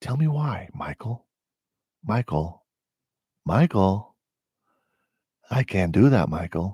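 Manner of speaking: sleepy, creepy, low-pitched voice. Answering a man named Michael who called him a fascist: sleepy creepy Biden voice. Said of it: "I'm doing the the the sleepy Biden creepy voice".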